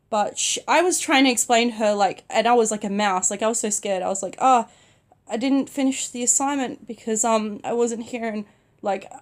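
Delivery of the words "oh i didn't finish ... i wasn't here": normal talking voice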